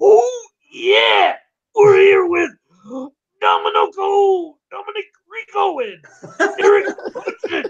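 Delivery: very high, slow, every word stretched, wrestling promo style. Showing how to open the stream in a wrestler impression: Randy Savage impression. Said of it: "in that voice".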